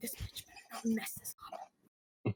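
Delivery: hushed, half-whispered muttering under breath. A player voices her glaring character, muttered under her breath. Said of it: "kind of whisper like mutters under her breath".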